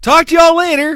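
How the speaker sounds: very high, very loud, shrill yelling. Saying the sign-off again when asked to repeat it: loud, yelling. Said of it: "That was really loud".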